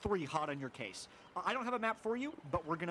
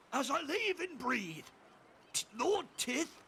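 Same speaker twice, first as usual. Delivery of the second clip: high, shouted dwarven captain character voice; 8 semitones higher than usual. Voicing a dwarven captain who spots a runner: dwarven captain shouting. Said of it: "you hear him shout".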